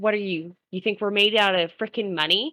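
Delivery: plain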